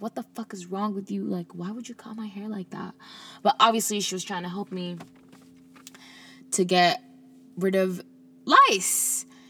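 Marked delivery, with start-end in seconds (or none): 0.0-2.9 put-on tearful cussing, much quieter. Retelling how, as a little kid, they cried and cussed out the woman who cut their hair. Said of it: "I started crying, pretty much cussing her out because I'm like".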